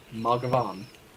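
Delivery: name said in the most American way. Trying to say a hard last name, Mugavon in the most American way. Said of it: "in the most American way that I can".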